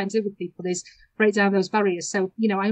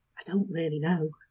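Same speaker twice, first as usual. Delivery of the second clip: hushed, secretive, confiding conspiratorial tone; 3 semitones lower, 5 dB quieter than usual. Retelling a pupil's answer to the visitor beside him: imitating a conspiratorial tone. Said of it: "he sort of conspiratorially says to me".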